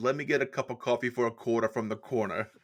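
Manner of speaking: heavy, laid-on, put-on New Jersey accent. Retelling a show character's line, in a Jersey accent. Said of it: "doing a Jersey accent".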